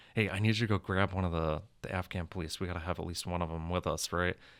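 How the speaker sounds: plain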